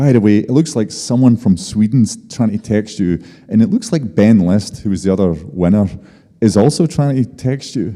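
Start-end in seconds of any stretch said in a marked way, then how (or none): none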